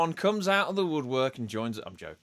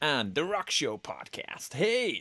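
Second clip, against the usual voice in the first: slipping into American accent; 3 semitones higher than usual. Podcast host greeting everyone and The Rock Show Podcast, American accent. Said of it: "I did that in an American accent".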